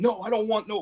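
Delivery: fed-up, exasperated, emphatic delivery. Retelling refusing a man who tries to pass something over, retelling own yelling. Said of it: "like I'm like yelling at him".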